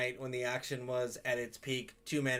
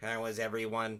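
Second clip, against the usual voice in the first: robotic, machine-like, mechanical robot delivery. Deciding to voice a character as a robot, greeting everyone; robot voice. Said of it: "why don't we make this robot voice".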